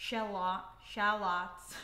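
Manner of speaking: "shallots" said the American way, put-on American accent. Trying out a word in an American accent. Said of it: "Let me try it in an American accent".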